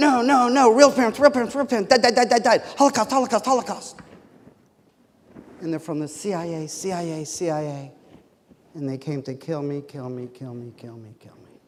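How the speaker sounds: loud, full-throated, repeated screaming. Judge retelling a man in court, imitating him screaming at the top of his lungs. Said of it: "screaming at the top of his lungs".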